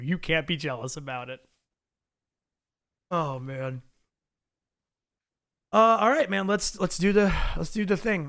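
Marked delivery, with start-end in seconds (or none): 0.0-1.4 mock deadpan delivery, lower pitch. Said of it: "with such a straight face".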